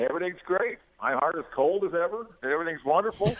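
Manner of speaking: high, enthusiastic cheer.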